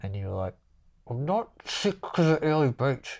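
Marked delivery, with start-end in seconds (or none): 1.1-3.2 mock cross, angry man's voice, pitched up. Retelling a friend's reply to a question, the speaker imitates an angry man. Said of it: "you would sound like an angry man".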